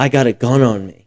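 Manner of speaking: put-on shaky, scared, trembling voice. Retelling a guy on a bike saying he had a gun, imitating a shaky, scared voice. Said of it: "he said it like super shaky and scared".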